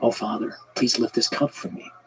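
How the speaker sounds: emotion-choked voice, catching. Retelling Jesus praying in the garden, choked up. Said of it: "I get choked up just thinking about this".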